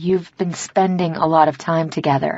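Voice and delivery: ordinary talk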